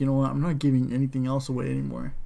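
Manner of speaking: ordinary talk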